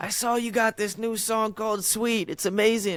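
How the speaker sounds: put-on high voice with New York accent. Retelling a grandma's daily phone call: imitating grandma's New York accent. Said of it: "She's got, like, the New York accent".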